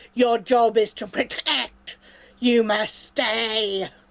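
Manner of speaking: big booming delivery. Game master voicing a character speaking to the players, in a booming voice. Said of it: "I'm going to do a booming voice".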